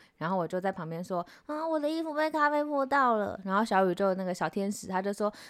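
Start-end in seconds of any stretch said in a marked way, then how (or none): 1.5-3.4 put-on sulky, whiny tone, pitched up. Retelling spilling coffee on clothes, wanting comfort: retelling own plea for comfort. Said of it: "就想要大家安慰我".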